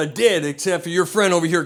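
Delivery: ordinary delivery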